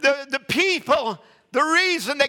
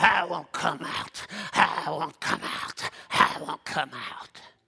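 hushed, breathy, whispered animal growl; 10 semitones lower, 6 dB quieter than usual. Retelling how a girl crouched and growled like an animal, imitating her growling. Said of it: "and growling".

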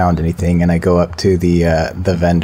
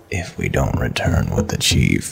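voice dropped low; 8 semitones lower, 5 dB quieter than usual. In character during a role-playing game, repeating a question to the party, lowered voice. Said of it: "And I lower my voice".

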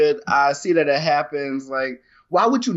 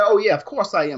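mocking, sarcastic, pitched-up agreement; 5 semitones higher than usual. Retelling how one man answered an accusation of jealousy: imitating a sarcastic reply. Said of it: "he agreed sarcastically".

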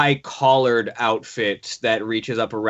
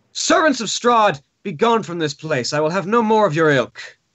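forceful, strong female voice, pitched up; 8 semitones higher, 3 dB louder than usual. The narrator voices someone behind a door answering the party's knock: strong female voice. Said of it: "a strong female voice emerges from the door".

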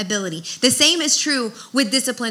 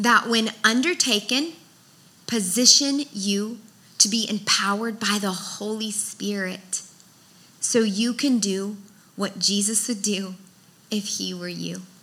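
saying it slowly, deliberate pace; 4 dB quieter than usual. Giving a definition for listeners taking notes: saying it slowly. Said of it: "I'll say it slow".

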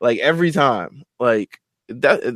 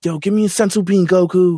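heroic anime character voice; 4 semitones higher than usual. Recapping a scene, speaker quotes Trunks, in a Trunks voice. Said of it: "That was a good Trunks voice".

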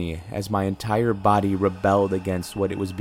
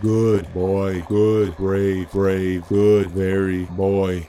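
rasping, bone-dry monster voice, forced out; 3 dB louder than usual. Narrator voicing a creature repeating words at the storyteller, bone-dry pumped creature voice. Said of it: "pushed by a pump through bone-dry vocal cords".

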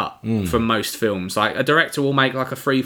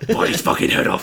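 put-on monster voice. Describing a scene from a film, in a Venom impression. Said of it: "quite a good impression of Venom".

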